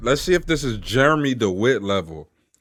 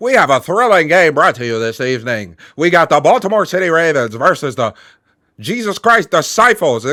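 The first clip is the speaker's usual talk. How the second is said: put-on loud, old-time sports announcer voice; 3 semitones higher, 5 dB louder than usual.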